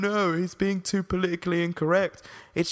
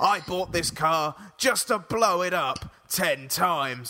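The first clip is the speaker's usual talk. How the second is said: mocking impression, dumb-sounding voice. Imitating how he reviews a car, mocking his stupid voice. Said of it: "And he's got that stupid voice".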